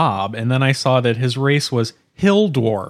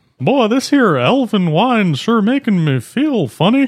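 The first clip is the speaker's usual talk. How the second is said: put-on cartoon Texan drawl, pitched up; 7 semitones higher, 3 dB louder than usual. A player replays a line from the game they played in that voice: put-on character voice. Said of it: "You do that voice so well".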